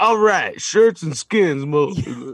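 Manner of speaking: mock Louisiana accent, deep. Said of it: "he has the deepest fucking voice".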